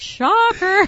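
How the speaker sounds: high, loud, sarcastic, mocking squeal. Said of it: "I just was like".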